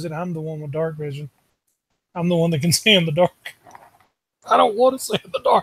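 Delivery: quiet, grudging grumble muttered under the breath. A begrudging character sits down after the ruse fails, muttered under his breath. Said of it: "just under his breath he goes".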